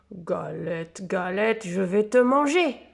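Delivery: big, deep, growling bear voice. Narrator reading a story, the bear meets the Galette, growling in a big voice. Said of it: "grogne l'ours de sa grosse voix".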